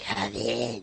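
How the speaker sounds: raspy smoker's voice. Voicing a character answering a knock after a request: smoker voice. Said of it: "a smoker voice".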